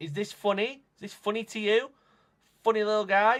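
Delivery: very loud, furious, shrill, needling outburst. Struggling with a computer after an update, angry. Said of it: "I'm sorry, I'm just angry".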